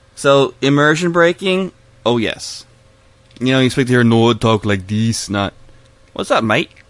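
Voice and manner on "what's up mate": casual put-on British accent. Speaker mocking how the Nords talk with British accents; put-on British accent. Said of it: "talk with British accents".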